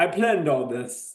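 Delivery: put-on Transylvanian-accented voice. Retelling what a filmmaker said at a screening: imitating a Transylvanian accent. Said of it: "Transylvanian accent or something like that".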